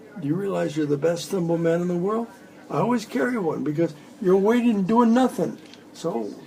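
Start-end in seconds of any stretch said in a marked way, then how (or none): none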